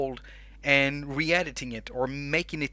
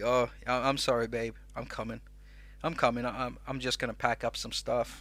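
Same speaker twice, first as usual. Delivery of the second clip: mock meek voice, lower, quieter; 3 semitones lower, 5 dB quieter than usual. Acting out his own reply when told off for talking too much, acting out a meek apology. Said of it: "And I'm gonna be like".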